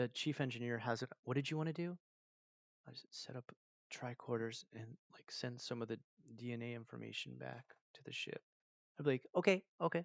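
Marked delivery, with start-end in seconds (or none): 2.9-8.4 put-on very low voice, much quieter. Retelling what the chief engineer said, imitating a really low voice. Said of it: "that's how he would talk, like really, really low".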